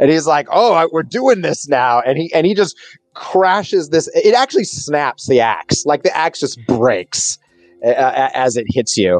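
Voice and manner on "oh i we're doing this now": play-acted irritated, put-out, ticked-off tone. Voicing a foe just struck by a player: ticked off. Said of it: "ticked off that you s-, came up and struck him".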